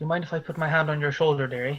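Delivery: gentle, barely-there, very hushed murmur. Voicing a character kneeling beside a grieving woman: softest possible voice. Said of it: "says in the softest possible voice he can manage".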